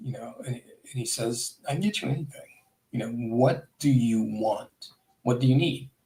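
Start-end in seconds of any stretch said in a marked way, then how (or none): 1.7-5.8 acted, grave, low-key, dead serious, earnest tone. Retelling an offer made while looking someone in the eyes: imitating someone speaking seriously. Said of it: "real serious".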